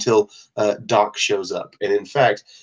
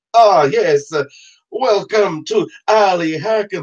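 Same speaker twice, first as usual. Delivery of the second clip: obviously fake, very high, loud Persian accent; 10 semitones higher, 5 dB louder than usual. Narrating a scene, the speaker voices a man in an obviously fake persian accent. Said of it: "he says in an obviously fake Persian accent".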